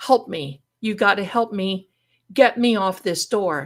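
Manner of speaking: loud screamed cry. Retelling being stuck to a burning hot door: retelling a scream for help. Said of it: "Now I start screaming".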